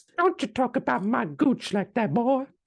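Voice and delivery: put-on Southern belle accent, very high. Playing ma, answering her boy's complaint, in a southern belle voice. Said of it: "she's turned into a Southern Belle".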